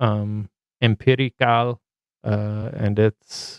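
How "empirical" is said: put-on Spanish accent. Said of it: "You gave it a little Spanish flavor".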